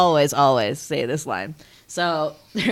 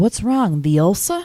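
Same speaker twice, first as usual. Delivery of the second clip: pitched-up female character voice; 5 semitones higher than usual. Retelling a movie scene, imitating the sidekick's delivery. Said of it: "The way she says it".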